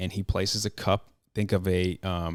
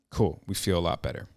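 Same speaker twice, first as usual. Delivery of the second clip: plain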